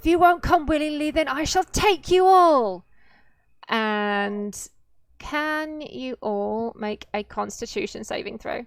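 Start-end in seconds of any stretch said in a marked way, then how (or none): 0.0-2.8 very loud, high-pitched spectral, ghostly cry. Voicing a ghost who threatens the party mid-fight: ghostly shout. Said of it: "She shouts".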